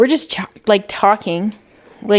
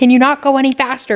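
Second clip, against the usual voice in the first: put-on yelling, higher pitch; 4 semitones higher than usual. Retelling what was yelled at a slow driver: retelling a yell. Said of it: "And I kinda yelled it".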